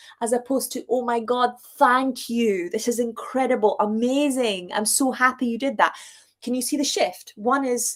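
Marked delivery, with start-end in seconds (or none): 0.9-5.9 joyful, heartfelt, delighted, grateful gush. Acting out someone happily receiving an expensive gift: grateful and delighted. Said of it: "one is gratitude, appreciation, and enjoyment".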